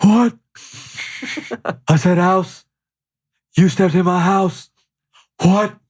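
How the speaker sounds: high, cigarette-roughened wrestler voice. After the group names Stone Cold, he tries a smoker-sounding Stone Cold impression. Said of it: "You sound like you've been smoking cigarettes for 30 years".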